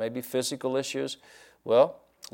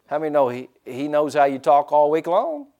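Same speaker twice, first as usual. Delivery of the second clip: usual speaking voice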